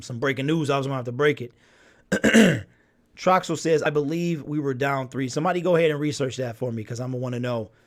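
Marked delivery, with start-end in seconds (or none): none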